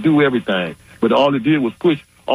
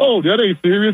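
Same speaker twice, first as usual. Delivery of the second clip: mock laughing while talking, higher pitch; 8 semitones higher than usual. Retelling how the press secretary dismissed it, imitating someone laughing while talking. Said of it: "she was just laughing like".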